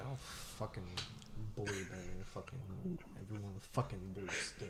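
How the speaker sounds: very quiet, low grumbling mutter under the breath. Player voices a character heard muttering at the magic shop; muttering. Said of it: "you can like kind of hear him mutter".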